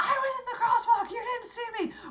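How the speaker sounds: acted, very high, shrill, loud, furious yelling. Retelling how the man in the crosswalk yelled at her: imitating someone yelling. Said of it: "was yelling at me".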